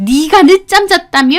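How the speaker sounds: sudden, shrill, high, loud yell. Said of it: "소리를 빽 지르시는 겁니다".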